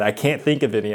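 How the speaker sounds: usual speaking voice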